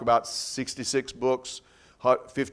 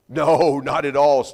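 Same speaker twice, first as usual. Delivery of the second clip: mock, very slow, heavy, loud, drawn-out sarcasm; 7 dB louder than usual. Retelling Gene's answer about writers contradicting each other: imitating Gene's sarcastic reply. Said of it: "he said very sarcastically".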